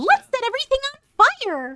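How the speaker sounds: very high, loud, swooping sing-song voice. Joking that everybody can do different voices, in a WoW gnome voice. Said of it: "Break out the WoW gnome voice".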